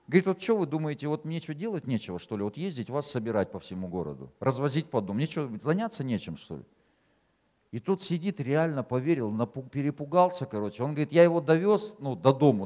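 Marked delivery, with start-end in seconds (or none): none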